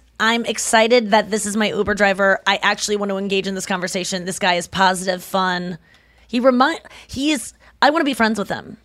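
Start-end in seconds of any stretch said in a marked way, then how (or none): none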